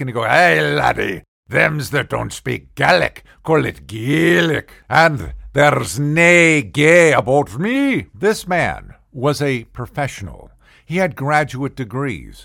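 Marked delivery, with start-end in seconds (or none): 0.2-8.1 put-on raised Scottish accent. Retelling what a scottish office-mate replied to him, in a scottish accent impression. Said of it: "I shared an office with a Scotsman".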